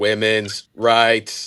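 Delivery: flat, mechanical, robotic monotone. Quoting how he responded, said like a robot: robotic voice. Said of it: "said it like this ... like like a robot".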